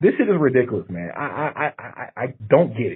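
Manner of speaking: angry, furious stammering. Venting frustration to watching viewers, angry stuttering. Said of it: "I'm stuttering so much because I'm pissed".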